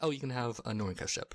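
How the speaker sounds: ordinary talk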